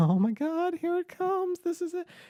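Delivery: very high piping voice. Imitating the other host reacting to the moving-out topic: imitating Eric. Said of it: "you're like".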